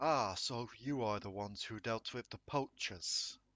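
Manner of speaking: reassuring, welcoming, comforting voice. A game master voices a tree greeting the approaching party, loud booming voice. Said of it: "A loud, booming yet comforting voice".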